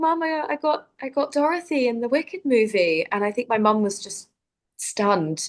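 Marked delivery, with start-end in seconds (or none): 0.0-3.1 put-on high, tearful, crying voice. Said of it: "'cause I was crying".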